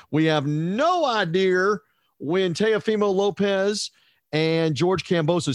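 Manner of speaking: put-on, fake Southern accent, drawn out. Boxing writer recapping the weekend's fight news: fake Southern drawl. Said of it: "my fake Southern drawl accent".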